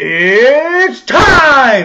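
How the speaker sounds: booming fight announcer voice. Doing an impression of Bruce Buffer announcing: Bruce Buffer impression. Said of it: "This is my impression of Bruce Buffer".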